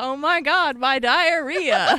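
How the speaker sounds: put-on mock yelling. Suggesting a line to yell when uncomfortable: fake yelling. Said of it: "Just yell, just yell".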